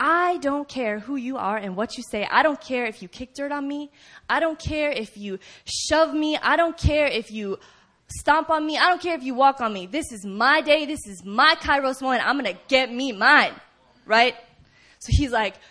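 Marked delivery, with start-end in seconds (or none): 0.0-13.5 put-on outcry, louder. Speaker acting out a man who cries out to Jesus all the more, retelling his outcry. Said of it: "So he cries out all the more".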